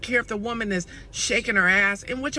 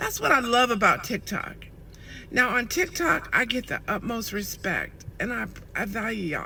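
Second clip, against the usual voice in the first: emotional, choked up, close to tears. A creator thanking her TikTok followers for their respect, choked up. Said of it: "I'm so choked up".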